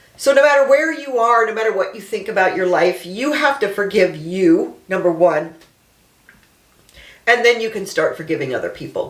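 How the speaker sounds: talking through tears, voice breaking. Addressing listeners, crying while speaking. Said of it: "I'm so sorry about this crying thing".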